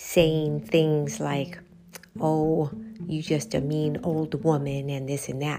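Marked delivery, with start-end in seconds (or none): 2.2-4.9 mock muttering under breath. Retelling a boy's words about his mother: imitating muttering under breath. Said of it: "under his breath".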